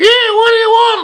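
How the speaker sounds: tiny, very high squeak of a voice. Retelling asking a barman for Rusty and a voice answering, in a little squeaky voice. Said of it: "this little squeaky voice says".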